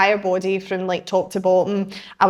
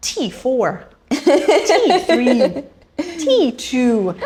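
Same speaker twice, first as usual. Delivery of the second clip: very slow, swooping sat nav readout voice; 5 semitones higher than usual. Describing a back scanning device that calls out vertebrae: imitating a sat nav voice. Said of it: "it sounds like a sat nav voice".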